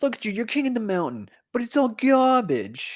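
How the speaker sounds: put-on New York accent. Quoting the old dub of Kaneda: Kaneda impression with pseudo New York accent. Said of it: "the pseudo New York accent".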